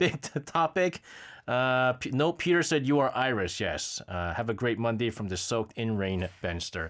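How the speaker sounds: ordinary talk, nothing marked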